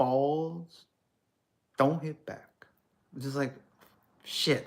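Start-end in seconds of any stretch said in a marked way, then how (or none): 0.0-2.7 put-on Hong Kong Chinese accent in English. Comparing accents, deliver Bruce Lee's line to show how he says it, in Bruce Lee's Hong Kong Chinese accent. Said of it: "like 5'7" Hong Kong Chinese guy saying".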